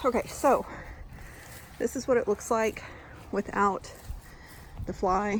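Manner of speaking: winded, out of breath, halting, broken-up phrases. Speaker explains what it looks like without the fly while out of breath. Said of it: "I am completely out of breath".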